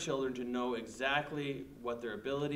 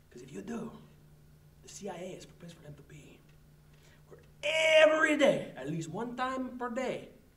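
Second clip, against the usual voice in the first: loud, very high put-on Spanish accent; 10 semitones higher, 5 dB louder than usual. Urging parents to send their kids to the CIA, in a Spanish accent. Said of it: "I will speak like this".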